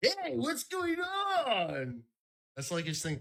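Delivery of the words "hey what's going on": very high, slow, swooping and drawn out. Doing an impression of Mark Norman, saying hey loudly. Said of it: "my impression of Mark Norman".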